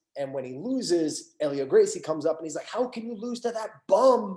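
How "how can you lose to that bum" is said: high-pitched, scolding, berating yell. Retelling how someone yelled at a fighter after a lost final: imitating someone yelling. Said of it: "yelling at Pedro".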